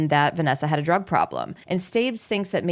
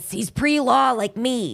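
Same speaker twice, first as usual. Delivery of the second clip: mocking raspy old-lady voice, pitched higher; 6 semitones higher than usual. Retelling a roommate's lines, imitating a raspy old-lady voice. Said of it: "Why am I saying, it's like she's an old lady".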